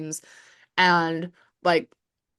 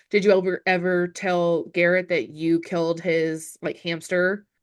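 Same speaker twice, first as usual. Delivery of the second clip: usual speaking voice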